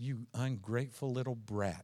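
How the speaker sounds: tender, doting, very loving sweet tone. Speaker joking about saying an insult in a very loving voice. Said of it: "in a very loving voice".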